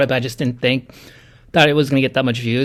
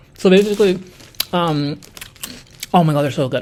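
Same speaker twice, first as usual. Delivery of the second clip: speaking while chewing food mid-sentence; 4 semitones higher than usual. Speaking to viewers while snacking, talking while eating Cheetos. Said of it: "as I'm eating these Cheetos".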